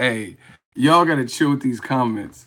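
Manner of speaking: normal talking voice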